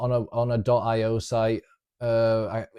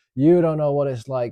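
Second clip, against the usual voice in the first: loud crying, sobbing through the words; 3 semitones higher, 6 dB louder than usual. Retelling a first girlfriend's tearful pleading, imitating someone crying.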